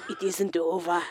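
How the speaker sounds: attempted Scottish accent. Imitating a dying man's last words: bad scottish accent. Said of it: "it sounded much different 'cause he was Scottish".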